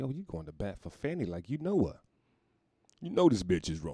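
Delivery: ordinary delivery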